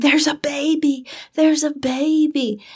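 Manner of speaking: acted whispering. Retelling a mom at a funeral calling over: imitating someone whispering. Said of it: "She was whispering".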